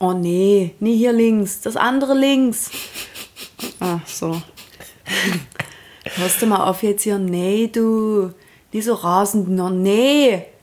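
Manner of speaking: put-on Saxon dialect accent. Acting out parents' driving directions, Saxon dialect accent. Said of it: "die meisten haben gerade [name] zum ersten Mal Sächsisch gehört".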